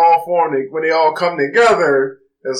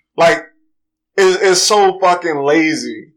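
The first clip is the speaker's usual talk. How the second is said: normal talking voice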